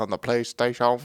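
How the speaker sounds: put-on Japanese accent. Mocking how another speaker said PlayStation: odd Japanese-accented pronunciation. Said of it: "say PlayStation so weird?".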